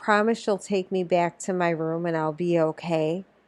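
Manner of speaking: ordinary talk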